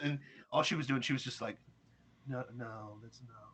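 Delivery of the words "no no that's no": feeble, very quiet, very slow voice. Retelling her denial when shown the document: imitating a weak voice. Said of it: "her voice got, like, so weak".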